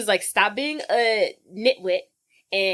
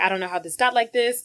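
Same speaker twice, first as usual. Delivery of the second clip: put-on panicked, freaked-out voice. Retelling a scene where a character finds his hair blonde, imitating someone freaking out. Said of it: "He's freaking out".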